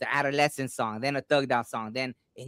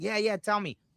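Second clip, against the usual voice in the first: high, all-excited, eager voice; 8 semitones higher than usual. Retelling own reply to a man who had a dream: imitating own excited reply. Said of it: "I get all excited".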